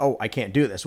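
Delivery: ordinary talk, nothing marked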